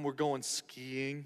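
put-on depressed voice. Retelling what a couple said to the speaker, imitating a depressed tone. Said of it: "Why are you depressed?".

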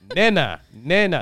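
mock pronunciation of nana. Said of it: "he says it so Caucasian".

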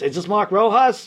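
put-on full-on, strong Brooklyn guy accent. Retelling a phone call from a man asking for him, in Emil Shalop's Brooklyn voice. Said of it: "straight up Brooklyn guy".

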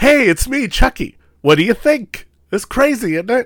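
nonchalant, breezy, offhand delivery in very high voice. Imitating Chucky talking to his magic teacher: nonchalant Chucky impression. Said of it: "he comes off a lot more nonchalant".

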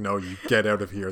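quiet, hushed, firm, threatening menace. Retelling how Giles confronts Spike: imitating Giles quiet and threatening. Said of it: "getting all, like, quiet and threatening".

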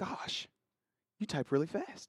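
put-on slow, breathy, whispery old man voice.

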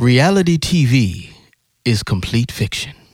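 radio announcer, on-air host delivery. Speaker reads out number one on a list: radio announcer voice. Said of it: "I'll put my radio voice on".

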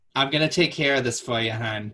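put-on female voice with Massachusetts accent. Imitating a Massachusetts customer service woman reassuring a customer. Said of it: "a Massachusetts woman calling you hon".

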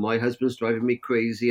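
ordinary delivery

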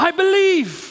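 high, slow, desperate cry.

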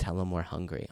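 put-on whisper. Retelling how Polly whispered a complaint in your ear: imitating Polly whispering. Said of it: "he'll pinch me again".

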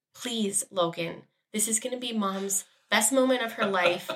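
hushed stage whisper. Retelling a plea to a restless child during a ceremony: imitating her own half-whisper. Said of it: "I literally had to whisper to him".

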